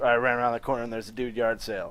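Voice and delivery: ordinary talk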